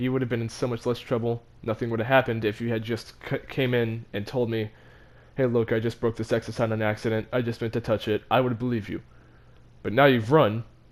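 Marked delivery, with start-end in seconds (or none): none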